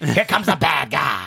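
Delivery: put-on announcing boss voice. Doing an impression of Vince McMahon: Vince McMahon impression. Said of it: "That's my Vince McMahon I'm working on".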